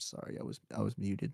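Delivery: very quiet, small, barely-there soft voice. Retelling how a shy boy apologized for being muted: quietly imitating Brandino. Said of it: "very quietly".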